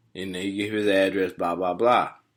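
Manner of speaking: ordinary delivery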